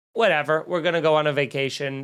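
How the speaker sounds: usual speaking voice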